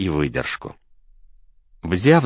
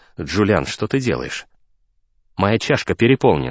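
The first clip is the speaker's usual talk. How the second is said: ordinary delivery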